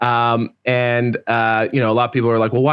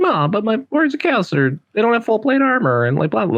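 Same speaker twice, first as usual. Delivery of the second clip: mocking, very high, swooping voice, words rattled off; 10 semitones higher than usual. Mimicking the other speaker's view in a mocking imitation voice. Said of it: "that voice was mocking".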